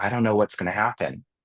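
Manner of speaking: fearful tone, pitch sinking toward "happen". Showing how a pitch change shifts meaning: fearful falling tone on happen. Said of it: "you heard my my tone went down".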